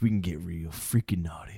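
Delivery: sultry whispered voice.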